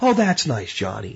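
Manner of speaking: patronizing, pandering schoolteacher voice, praising tone. Describing how associates reacted, the speaker puts on a mock pandering schoolteacher voice. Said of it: "That voice, you know?".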